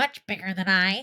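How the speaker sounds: ordinary delivery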